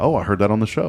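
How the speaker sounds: ordinary delivery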